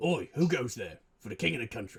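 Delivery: put-on London Cockney accent. Voicing a guard who challenges travellers: cockney accent. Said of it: "they're fucking Cockney".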